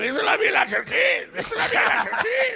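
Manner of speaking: mimicking shout, high and loud.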